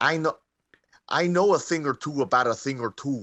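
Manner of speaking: clumsy, badly faked Minnesota accent. Discussing a film, imitating De Niro's line to Leo in a bad Minnesota accent. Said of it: "trying to do like a Minnesota accent".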